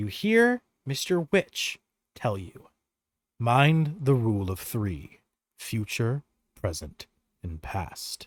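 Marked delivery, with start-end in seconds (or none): 3.4-8.3 barely-there, faint half-whispered voice. Voicing Mister Witch giving a parting warning through a portal: faint half-whispers. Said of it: "the faint whispers of Mister Witch".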